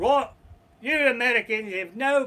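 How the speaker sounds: put-on British accent. Retelling how a stranger on a hike confronted them, the speaker imitates the british hiker's accent. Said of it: "the British guy is hiking".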